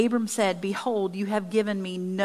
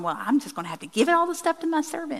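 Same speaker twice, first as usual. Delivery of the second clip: fast, swooping, sarcastic, mocking reading, pitched up; 7 semitones higher than usual. Paraphrasing what a man in the passage says, the speaker gives a sarcastic retelling. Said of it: "I want to read this sarcastically".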